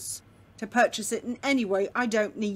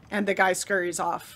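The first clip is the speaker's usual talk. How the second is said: ordinary talk, nothing marked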